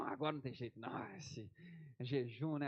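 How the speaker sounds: won-over, no-way-out, convinced giving in. Acting out an imagined scene, playing God won over by fasting. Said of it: "Aí Deus que tava em dúvida".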